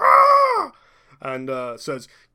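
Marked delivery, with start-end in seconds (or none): 0.0-0.7 very loud, very high, drawn-out bird screech. Voicing a bird captain who turns and squawks: squawking cry.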